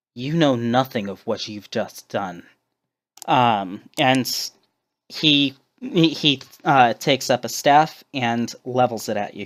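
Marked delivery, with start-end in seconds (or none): 0.2-2.5 sneering, faster. Voicing a character confronting the listener after a raid on his home, sneering. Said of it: "He sneers".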